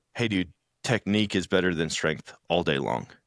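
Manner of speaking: calm, even voice. Retelling what a training partner said lying on his back: imitating someone speaking calmly. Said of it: "he just really calmly, laying on his back, goes".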